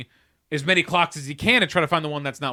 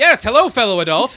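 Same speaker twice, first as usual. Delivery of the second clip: children pretending to be grown-ups, higher, louder; 7 semitones higher, 8 dB louder than usual. Retelling a movie gag where kids are disguised as grown-ups: kids posing as adults. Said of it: "walking around going".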